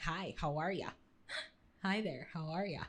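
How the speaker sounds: low, put-on cartoon character voice. Chatting with a friend, the speaker mimics a cartoon greeting: SpongeBob impression. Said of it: "You know who say it like that? SpongeBob".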